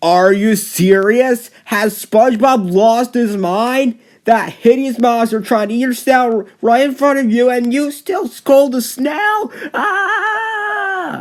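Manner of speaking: very high-pitched, shrill, furious yelling rant. Ranting about a cartoon episode's worst scene: yelling angrily. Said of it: "sorry for yelling".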